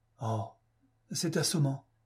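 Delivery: protesting, objecting. Mr. Fotheringay, accused of breaking a lamp, protesting. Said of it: "protesta M. Fotheringay".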